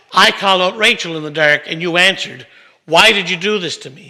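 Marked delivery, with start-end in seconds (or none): none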